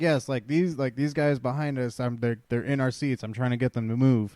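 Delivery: ordinary delivery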